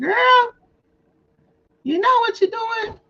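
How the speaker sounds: shrill, very high-pitched yell. Retelling how Tan yells about showing personal information: imitating Tan yelling. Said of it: "she be yelling at me".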